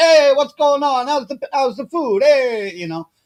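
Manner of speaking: high put-on Brooklyn accent. Retelling what a guy said when he came up, in a stereotypical Brooklyn accent. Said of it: "I don't know why I'm going stereotypical".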